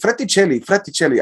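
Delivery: soft, put-on Spanish accent. A podcast host repeats a guest's surname, in a Spanish accent. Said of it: "I'm saying that with a Spanish accent".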